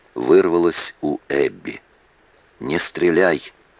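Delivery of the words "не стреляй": firm, commanding whisper. Mitch gives Ray an order, again in a whisper; whispered command. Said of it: "опять же шепотом приказал Митч".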